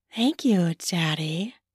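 put-on sugary, sweet little-girl voice. A narrator voices her own thanks to the man with her, in a sweet voice. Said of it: "I said in my sweet voice".

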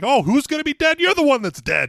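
acted, very high, loud, heated screaming tirade. Imagine him in the other room taking the phone and yelling back, imitating Joe Pesci screaming. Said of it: "he's like fucking screaming at him".

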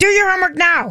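gruff, angry father voice. Discussing whether kids obey dads differently, demonstrating an angry, gruff dad voice. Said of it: "if a dad said it in an angry, gruff voice".

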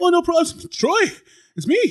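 breathless, winded voice, very high and slow. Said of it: "thanks, Out of Breath Man".

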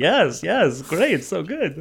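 high, mooing, lowing cow-like voice. Speaker acts out nodding along with everyone, in a cow-like voice. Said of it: "Why are you sounding like the cow?".

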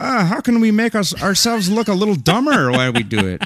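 very high, clumsy, bad put-on Irish accent. Imitating Irish people about looking dumber: bad Irish accent. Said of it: "I don't know how to do an Irish accent".

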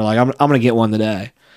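usual speaking voice

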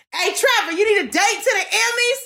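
mock, very high, carrying holler. Retelling calling out to the boss going upstairs: retelling own yell. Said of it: "I just yelled".

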